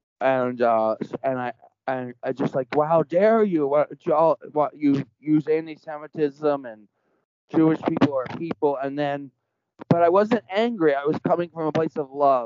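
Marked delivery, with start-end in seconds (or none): none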